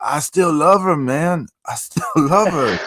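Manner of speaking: tough street-talk voice. Retelling a parody video where Optimus Prime talks about a girl: thugged out Optimus Prime voice. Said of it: "you'll see Optimus Prime talking about some girl".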